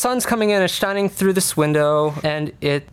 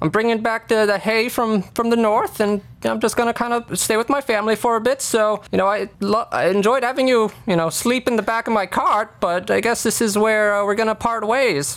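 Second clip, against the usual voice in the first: put-on old farmer voice, much higher; 5 semitones higher than usual. An old farmer driving a hay cart says goodbye to his passenger, in an old farmer voice. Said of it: "There's a old farmer man kind of, you know, driving this horse-drawn carriage, carrying some hay".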